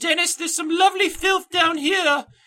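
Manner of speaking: very high-pitched peasant character voice. Podcast host, tired of cold weather and wanting to dig, in a Monty Python Dennis voice. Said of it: "That was my uh, Dennis voice for Monty Python".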